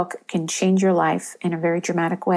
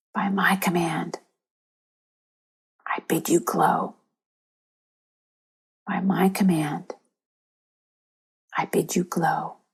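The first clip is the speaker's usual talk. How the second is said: hushed whisper throughout; 4 dB quieter than usual. Leading a group through the affirmation again: whisper. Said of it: "now we'll do it in a whisper".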